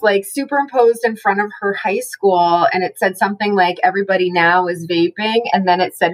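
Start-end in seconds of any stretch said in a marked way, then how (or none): none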